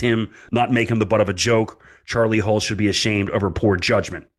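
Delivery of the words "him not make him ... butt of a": ordinary delivery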